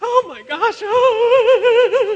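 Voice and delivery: shrill, loud, drawn-out panicked schoolgirl squeal, very high. Retelling being lost in a dark alley alone: mock panicked teenage schoolgirl. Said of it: "I'm like a teenage schoolgirl".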